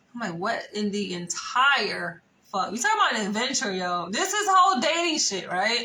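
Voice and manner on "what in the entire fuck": usual speaking voice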